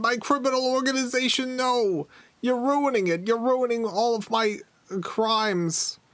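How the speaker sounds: tiny, squeaky, high frog voice. Playing a game character, a small frog complains to the listener that they are ruining its criminal business, in a tiny voice. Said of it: "you hear a tiny voice say".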